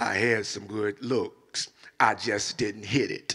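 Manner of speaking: deep, slow, hushed voice, dropped way down. Quoting what Kobe would say to the camera: Kobe voice. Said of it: "in the voice of Kobe".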